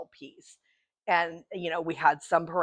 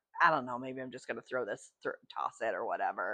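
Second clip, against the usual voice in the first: low, soft, grumbled mutter under the breath; 6 semitones lower, 6 dB quieter than usual. Retelling a frustrated comment made at a bowl: imitating muttering under breath. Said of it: "some comment under my breath".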